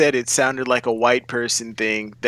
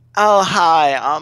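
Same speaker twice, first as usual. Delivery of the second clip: overdone, exaggerated, aggravating woman's voice, raised; 4 semitones higher, 5 dB louder than usual. Retelling what a woman said at Taco Bell, exaggerated imitation of a woman. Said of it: "I'm exaggerating the voice".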